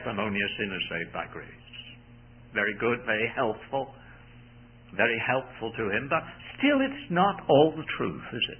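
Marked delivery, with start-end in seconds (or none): 0.0-1.5 put-on muttering under the breath. Retelling what a man would say before reaching the platform, acting out muttering under breath. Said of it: "he would mutter under his breath".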